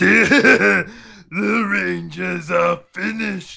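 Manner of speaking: very high, loud, rasping villain voice. Unable to do Lord Zed, the speaker switches to a Goldar impression. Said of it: "But I can imitate Goldar".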